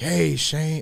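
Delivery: put-on Tennessee Southern accent. Quoting a card from a former guest, the speaker tries Aaron Walker's voice. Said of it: "I try to do it in the Aaron Walker voice".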